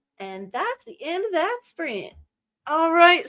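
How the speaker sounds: Southern Tennessee accent. Finishing a sprint as the accent slips out, tennessee accent. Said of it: "Why is my Tennessee accent just coming out?".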